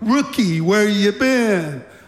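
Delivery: mocking, needling, sarcastic tone. Retelling how Pierce asked the rookie where he'd been: imitating Pierce speaking sarcastically. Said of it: "he said sarcastically".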